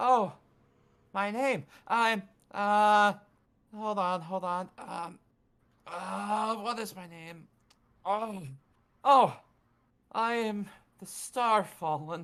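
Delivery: high, very slow, drawn-out little spirit voice. Voicing a little spirit in a lantern greeting the players: voicing a little spirit. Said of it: "you see this little spirit".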